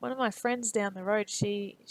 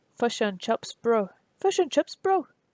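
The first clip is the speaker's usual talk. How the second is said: bad fake New Zealand accent, louder, slower; 3 semitones higher, 5 dB louder than usual. Trying again after admitting they can't do it, bad fake Kiwi accent. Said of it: "It's just bad".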